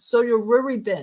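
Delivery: put-on voice slipping into a British accent. Recounting an actor's line from a film, Robert Pattinson British accent. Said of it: "he's American, but he says".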